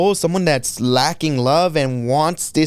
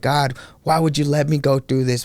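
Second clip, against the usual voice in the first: put-on crying, tearful, sobbing voice. Retelling a past prayer while crying and cursing: retelling crying and cursing. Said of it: "I was crying and cursing him".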